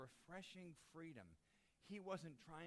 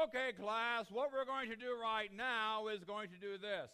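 booming, very loud, slightly British teacher voice; 5 semitones higher, 15 dB louder than usual. Mimicking a teacher heard from the class next door: loud, slight British accent. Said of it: "Loud and a little bit of a British accent".

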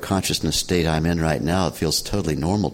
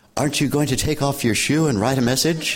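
put-on loud voice, much higher-pitched, muffled as through mask; 9 semitones higher than usual. Retelling what a seatmate on a bouncing plane asked, in a very loud voice. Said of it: "through his mask in a very loud voice".

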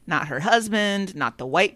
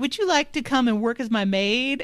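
high, patronizing, condescending lady talking down; 6 semitones higher than usual. Retelling what the mayor's wife says: imitating a condescending racist lady. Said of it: "super racist and condescending".

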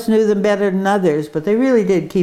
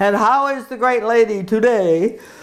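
grand, showy, courtly, flattering delivery, acted out; 2 semitones higher than usual. Retelling how he greeted each lady friend: imitating a booming voice. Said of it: "This delivered in a booming voice for all to hear".

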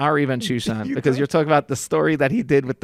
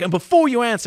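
put-on, sharp, raised, pitched-up yelling; 9 semitones higher than usual. Retelling an angry rant aimed at the speaker: imitating someone yelling. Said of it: "So he starts yelling at me".

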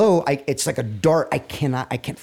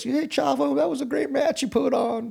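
put-on very high, raspy voice with Texas accent; 12 semitones higher than usual. Retelling what Terry Funk said after a match: raspy Texas voice, Terry Funk. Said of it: "he's got that raspy Texas voice".

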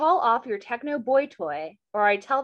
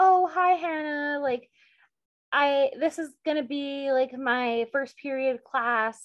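put-on timid, shy voice; 5 semitones higher than usual. Retelling how a new girl at school greeted Hannah, imitating Kate being timid. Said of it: "she's acting all timid and shy".

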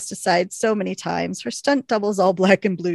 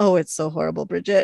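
put-on, mocking, taunting tone; 2 semitones lower than usual. Imagining how the quote would sound, imitating Emily taunting. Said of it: "I can just hear her saying".

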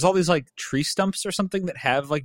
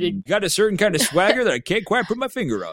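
high-pitched, marble-mouthed drawl; 5 semitones higher than usual. Co-host demonstrating the voice Jim Varney does, in Jim Varney marble-mouth voice. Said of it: "he talks like this".

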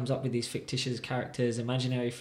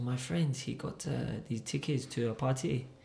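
slow, put-on French man's accent; 3 dB quieter than usual. Retelling what a French man told him about party tickets: French accent. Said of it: "keep up with the French accent".

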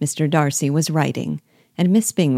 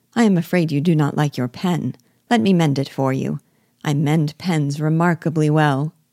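plain

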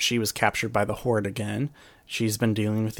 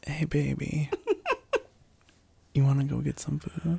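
high, sing-song, sugary put-on sweet voice; 5 semitones higher than usual. Acting out switching from angry at Matt to hungry: put-on sweet voice. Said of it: "Is that your sweet voice?".

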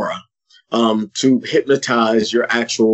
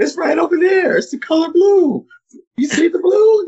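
put-on screaming voice, higher. Quoting a Blue's Clues moment where somebody answers: imitating a Blue's Clues scream. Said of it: "somebody screams out".

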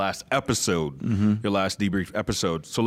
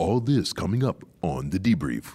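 slow movie-trailer announcer delivery; 2 semitones lower than usual. Speaker says he should do this line in his movie trailer voice. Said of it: "I should say this in my movie trailer voice".

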